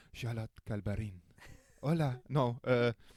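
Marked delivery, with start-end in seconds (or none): 0.2-1.2 the name said in a put-on French accent. Host introducing a guest on his show, in a French accent. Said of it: "I'm gonna say it with a French accent".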